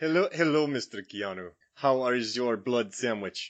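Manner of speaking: put-on Romanian accent. Playing Dracula at dinner and addressing Mister Keanu, in a Gary Oldman Dracula impression. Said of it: "a British guy doing a Romanian accent".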